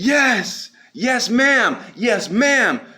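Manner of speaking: shrill, high, desperate scream, yes drawn out. Speaker retells begging to be let out, re-enacting their own desperate screaming. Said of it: "I'm literally screaming".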